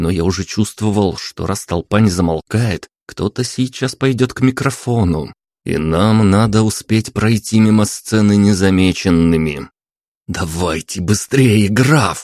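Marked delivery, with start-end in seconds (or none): 10.3-12.2 hissed angrily. Narrator urges the count to hurry past the stage, angry hiss. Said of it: "сердито прошипел я".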